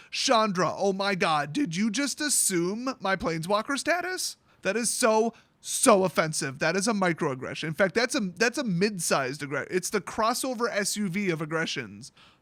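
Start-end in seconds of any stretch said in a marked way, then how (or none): none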